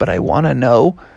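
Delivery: plain reading voice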